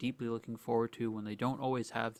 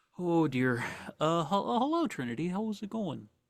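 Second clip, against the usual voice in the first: weary, tired, stumbling, pitched-up voice; 6 semitones higher, 6 dB louder than usual. Voicing Henry greeting Trinity: tired Henry voice. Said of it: "He does look kinda, like, tired".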